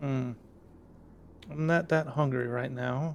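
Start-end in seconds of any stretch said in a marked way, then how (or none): 1.5-3.2 female fox character voice. Voicing the fox refusing offered cheese: female fox voice. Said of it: "it's a female voice".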